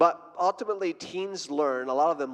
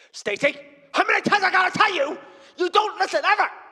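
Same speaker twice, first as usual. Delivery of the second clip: very high, shrill, loud scolding yell; 6 dB louder than usual. Showing teenagers the difference between yelling and being direct, yelling. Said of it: "this is yelling".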